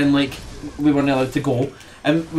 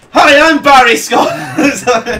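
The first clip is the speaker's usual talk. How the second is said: very loud, high, slow drawn-out bellowing shout; 10 semitones higher, 9 dB louder than usual. Joking about the cleaning advert, doing its catchphrase: Barry Scott voice. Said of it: "try and say Barry Scott".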